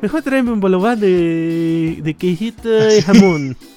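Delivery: fake put-on Chilean accent. Acting out a customer ordering food: put-on Chilean accent. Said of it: "ya soné como chileno".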